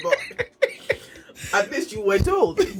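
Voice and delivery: speech broken up by laughing. Responding to the other speaker's story, laughing while talking. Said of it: "I'm laughing".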